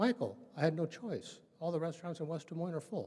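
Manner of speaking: ordinary talk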